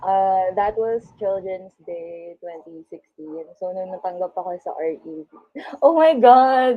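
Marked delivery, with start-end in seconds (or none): 5.8-6.8 loud, slow emotional outburst. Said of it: "I'm getting emotional".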